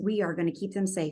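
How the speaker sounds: normal talking voice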